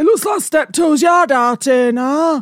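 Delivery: mocking put-on voice. Quoting a stressed Scott back to him, mocking impression of Scott. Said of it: "I don't talk like that".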